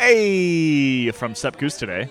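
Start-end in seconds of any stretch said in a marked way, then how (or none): 0.0-1.1 higher, very American "hey". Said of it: "I got a very American".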